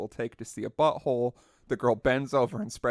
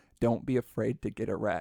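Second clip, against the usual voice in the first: put-on whisper. Retelling what she whispered into the speaker's ear at a strip club: imitating a whisper. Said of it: "leans into my ear and whispers".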